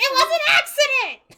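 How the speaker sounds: shrill, high, loud yell. Insisting in character that the stabbing was an accident: yelling. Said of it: "Just her yelling as they go up the stairs".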